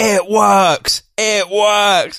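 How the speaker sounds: put-on fitness instructor scream, loud and drawn-out. Retelling how a woman slapped her stomach in class: imitating someone screaming. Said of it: "just screaming".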